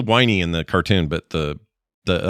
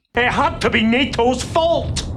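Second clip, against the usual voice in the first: very high, very slow, dragged-out character voice. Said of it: "They went full Scrooge McDuck there".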